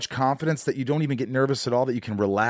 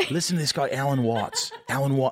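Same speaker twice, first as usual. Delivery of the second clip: put-on failed Welsh accent that sounds Australian. Recalling meeting Matt Ryan, the speaker quotes him in a failed Welsh accent. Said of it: "I'm doing Australian, aren't I?".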